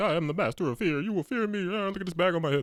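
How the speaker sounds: silly, hammy cartoon villain voice, high and goofy. Retelling how Scarecrow talked when the show started: goofy Scarecrow voice. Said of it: "He was pretty goofy".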